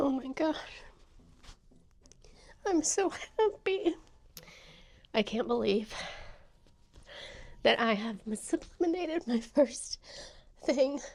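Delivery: tearful, crying happy tears while speaking. Reacting to a first success on camera, crying happy tears. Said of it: "Why am I crying?".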